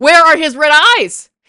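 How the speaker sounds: loud and exasperated, said again.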